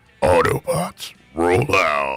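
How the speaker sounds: deepest bass, put-on character voice. Trying an impression after being told their bass fits: Optimus Prime voice. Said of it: "I might pull off an Optimus Prime".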